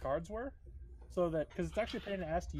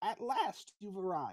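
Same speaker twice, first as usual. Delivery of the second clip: put-on crackling old lady voice, like dry weeds; 3 semitones higher than usual. Narrating a scene, voicing the old lady as the listeners enter: crackling old lady voice. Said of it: "her voice crackling like dry weeds".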